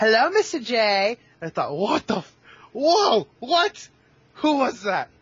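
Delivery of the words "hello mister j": teasing, playful cartoon villainess voice. Recalling a Joker-themed ringtone suddenly going off; Harley Quinn imitation. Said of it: "in the best imitation of Harley Quinn".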